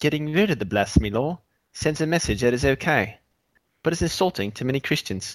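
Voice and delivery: British accent held throughout. Co-host reads a quoted statement aloud at the other's request, Geico gecko British accent. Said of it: "Why don't you read what he said in a British accent?".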